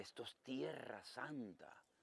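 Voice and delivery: very slow, soft, slow-motion speech. A pastor retelling what a sister from church told him, imitating very slow speech. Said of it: "hablaba así despacito, en cámara lenta".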